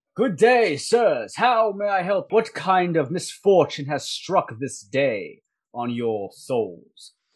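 loud, carrying delivery. A soldier walks up to the three travelers and greets them, speaking out loud to be heard. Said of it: "he tries to speak out loud enough so you all can hear him".

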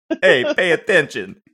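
put-on Italian mafioso mob boss accent. Redoing Dave Thomas's line from a scene with a dog and a map, Dave Thomas as Italian mafioso. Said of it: "I also just made Dave Thomas like an Italian mafioso".

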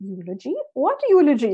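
put-on sweet, cute, sing-song Indian accent. Retelling her mom's reply after reading her the eulogy, in a cute little Indian accent. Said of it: "in her like really cute little Indian accent".

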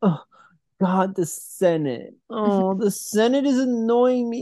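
very high, whiny, complaining weenie drawl. Mocking the movie's emperor complaining about the senate: mock complaining weenie voice. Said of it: "the scene where he shows up and he's like".

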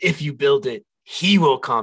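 creepy, spooky, eerie voice. Imitating the voice in the cornfield from Field of Dreams: creepy cornfield voice. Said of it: "that creepy voice in the cornfield".

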